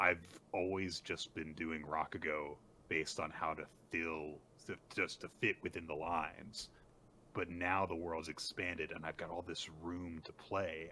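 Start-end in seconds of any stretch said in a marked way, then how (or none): none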